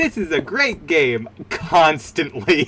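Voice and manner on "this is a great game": put-on childlike, pitched-up small kid voice. Recalling a toy game's voice line that played constantly, Little Hoops kid voice. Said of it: "a voice of like a kid saying".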